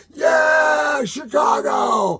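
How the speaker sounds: very high, whooping, excited scream with long drawn-out "yeah". Retelling how he screamed for Chicago whenever the band finished, screaming. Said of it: "And I just kept screaming".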